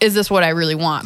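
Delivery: ordinary delivery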